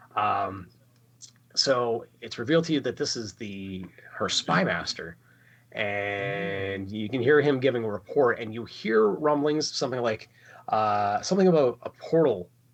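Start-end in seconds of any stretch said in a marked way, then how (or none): none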